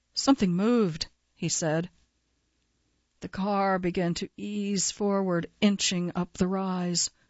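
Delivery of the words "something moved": ordinary talk, nothing marked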